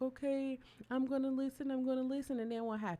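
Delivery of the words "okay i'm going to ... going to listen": tearful, high, crying voice, caving in. Retelling a moment when the body shut down: imitating own past crying. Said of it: "I'm over here and I'm crying".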